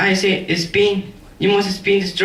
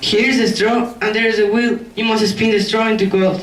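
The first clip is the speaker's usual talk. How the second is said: plain reading voice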